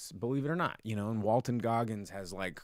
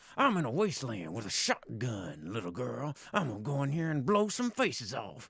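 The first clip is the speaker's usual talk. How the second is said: put-on southern accent spoken through clenched teeth. Mocking an actor's recent roles, speaker talks through clenched teeth with a southern accent. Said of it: "talking through your teeth with a southern accent".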